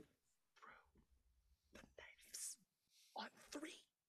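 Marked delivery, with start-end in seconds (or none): 1.7-3.8 very soft, hushed whisper. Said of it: "he's like".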